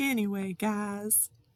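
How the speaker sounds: put-on southern American accent. Retelling a catchphrase of Llama Mama Kayla: imitating Llama Mama Kayla's southern accent. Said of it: "So I always say that now".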